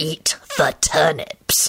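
menacing, low, threatening hiss. Reading a story: a character orders another again to eat the turnips, hissing threateningly. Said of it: "he hissed threateningly".

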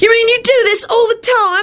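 very high, thrilled, delighted shriek. Narrator voicing an excited character's eager question: delighted shriek. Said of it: "Timothy shrieked".

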